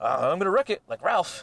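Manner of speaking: high, goofy, silly comic-actor voice. Retelling how a comedian does a silly person: John C. Reilly voice. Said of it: "does a really good John, John C. Reilly".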